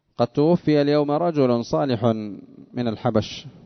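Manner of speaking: plain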